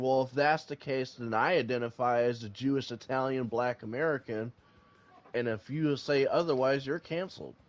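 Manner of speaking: ordinary talk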